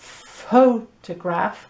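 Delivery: photograph with first syllable pho emphasized. Explaining word stress in a pronunciation guide: stress on first syllable pho. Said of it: "the first syllable pho has the stress".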